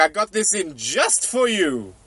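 accidental, slightly cartoonish game-character voice. Voicing a shopkeeper throwing a player peaches: accidental Mario voice. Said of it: "He sounded a little bit like Mario there".

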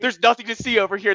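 play-acted guard voice, yelling out loud. Retelling a favorite scene where Five guards the room: imitating Five yelling. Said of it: "he was just yelling".

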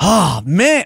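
mock fed-up, thwarted, frustrated let-down groan. Retelling a stranger's reply on hearing there's no joint: imitating someone frustrated. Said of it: "so frustrated".

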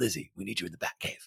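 hushed, soft superhero voice. Retelling how a voice actor spoke to a girl, in the Batman voice. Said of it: "he did the Batman voice".

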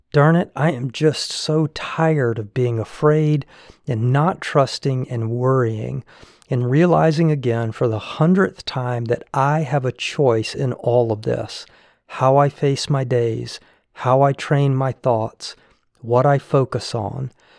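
usual speaking voice

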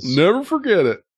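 put-on very high-pitched, squeaky voice with Southern accent. Imitating couples who married on a memorable date: put-on Southern voice. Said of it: "I don't know why I'm doing that voice".

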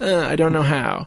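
put-on helpless, whiny little-child voice. Retelling how a character complains he can't do it: imitating a whiny childlike voice. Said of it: "all super whiny, like a little child".

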